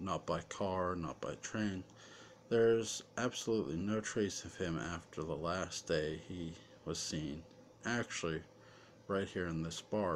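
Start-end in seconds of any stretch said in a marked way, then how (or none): none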